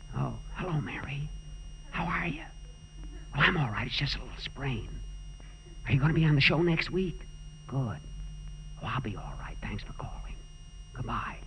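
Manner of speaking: hushed, quick whispering. Boss, in bed with a sprain, takes Mary's phone call: whispering. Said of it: "what are you whispering about?".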